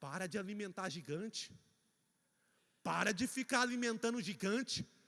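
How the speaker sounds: very soft, hushed, quiet delivery. Telling the listeners what heaven is saying to someone: very softly. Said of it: "vou dizer bem baixinho".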